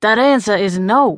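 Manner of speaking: growling voice. Reading a character's refusal, growled. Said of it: "he growled".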